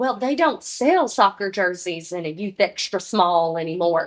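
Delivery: exaggerated, laid-on-thick Southern accent. Acting out a mom's group chat message: exaggerated Southern mom voice. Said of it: "doing all the different voices for the moms".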